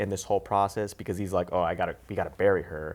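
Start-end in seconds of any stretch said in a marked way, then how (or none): 1.5-3.0 anxious, nervous, upset, distraught tone. Retelling a movie scene, imitating a nervous, distraught character. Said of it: "he's very nervous and he's very distraught".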